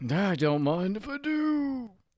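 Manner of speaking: very high, slow put-on old man voice. Asked to whip up something for the group, replying in an old man voice. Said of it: "I don't know why I did old man voice".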